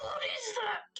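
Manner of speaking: freaking out. In character as an unseen impact hits the ship: panicked. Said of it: "I'm freaking out!".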